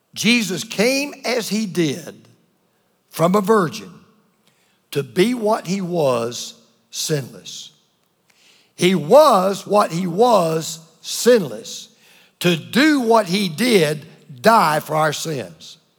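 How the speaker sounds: very slow, deliberately slowed right down. Explaining Jesus' virgin birth to listeners, saying it really slowly. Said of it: "I'm going to say this really slow".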